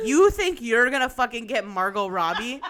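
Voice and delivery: loud, scathing, contemptuous delivery. Retelling how the matchmaker ripped a guy to shreds: imitating someone tearing into him. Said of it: "she just ripped him to sh-, shreds".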